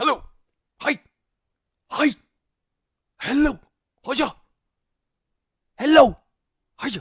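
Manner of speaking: very loud, high, shrill yelled bursts. Asked to introduce himself, he greets everyone, shouting loudly. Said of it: "You don't have to shout so loud".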